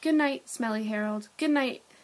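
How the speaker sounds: ordinary delivery, nothing marked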